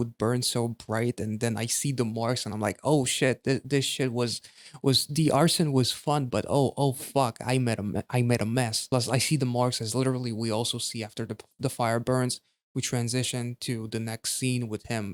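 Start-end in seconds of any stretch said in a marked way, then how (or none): none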